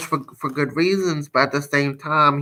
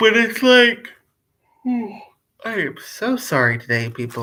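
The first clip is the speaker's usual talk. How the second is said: speaking through a yawn, much higher; 8 semitones higher than usual. Talking to her viewers and apologizing to them, yawning while talking. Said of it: "I'm sorry for yawning".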